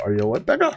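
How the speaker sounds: put-on spoken in a German accent. Retelling what the speaker says to enemies in a game: german accent. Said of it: "and then I go".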